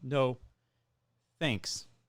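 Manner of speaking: flat, robotic, machine-like voice. Retelling answering a drive-through worker: robotic voice. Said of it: "talking robot to a robot".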